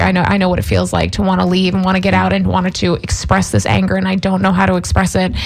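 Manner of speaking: ordinary talk, nothing marked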